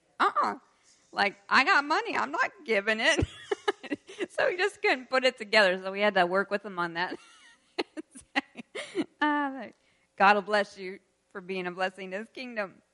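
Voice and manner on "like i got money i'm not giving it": put-on high, louder, stubborn serious child voice. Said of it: "he was just very serious".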